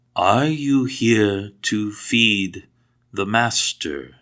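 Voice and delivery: somewhat broken, halting Common speech. A figure who barely recognizes you walks up and asks: somewhat broken Common. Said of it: "he says in somewhat broken common".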